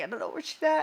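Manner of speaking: acted-out very high, breaking, choked-up voice. Retelling what they said while searching for a missing child: retelling choked-up words. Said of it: "choked up".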